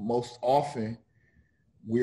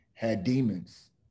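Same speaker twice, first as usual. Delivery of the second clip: usual speaking voice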